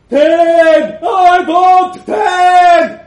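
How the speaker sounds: wild shriek, very high and very loud. Narrator reads another man's outburst in the scene: shouting. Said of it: "a young lad of about 25 with big red eyes full of weirdness. / a young lad of about 25 with big red eyes full of weirdness. John started to dance around the room, pointing his fingers like guns. / a y".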